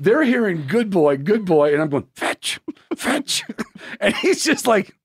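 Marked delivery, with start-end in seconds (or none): 2.1-3.4 mock pleading whisper, much higher pitched. Retelling what they whispered while stroking his back, a whispered plea. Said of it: "So you just whisper plead?".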